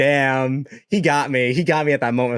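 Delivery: ordinary talk, nothing marked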